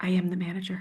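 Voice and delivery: hushed whisper under the breath. Telling a story, the speaker recalls whispering to someone up close: retelling a whisper. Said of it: "and I whispered".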